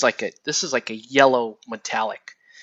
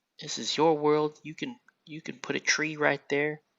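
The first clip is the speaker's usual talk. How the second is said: bad, hushed put-on TV painter voice, softly murmured; 3 semitones higher, 7 dB quieter than usual. Doing a self-described terrible impersonation: terrible Bob Ross impression. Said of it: "It's my terrible Bob Ross impersonation".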